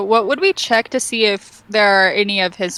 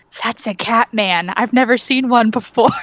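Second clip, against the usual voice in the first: very quiet, hushed whisper; 2 semitones higher than usual. Character whispers so only the two people beside her hear, whispering very quietly. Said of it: "I'm gonna whisper to everybody very, very quietly".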